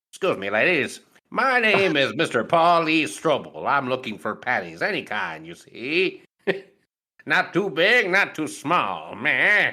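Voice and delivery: put-on high, old-fashioned, old-timey gentleman voice. Acting out an imagined father going door to door: Paul's father as old-timey gentleman. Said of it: "a visualization of Paul's father in an old-timey gentleman's suit".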